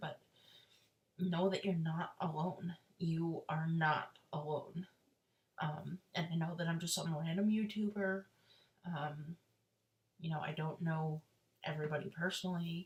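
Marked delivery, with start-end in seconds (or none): 0.0-4.9 voice catching, close to tears, reassuring. Youtuber speaking to viewers about finding a doctor they trust: teary-eyed. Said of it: "I don't mean to get teary eyed here".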